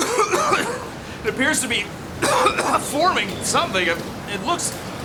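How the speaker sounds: speech broken up by repeated coughing fits.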